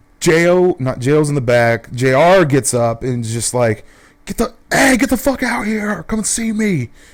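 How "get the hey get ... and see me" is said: mock shrill, high, heated, furious yell. Retelling a friend shouting in the street at three in the morning: imitating someone yelling. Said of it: "he's yelling".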